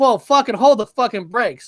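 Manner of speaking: plain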